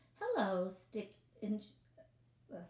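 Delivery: ordinary delivery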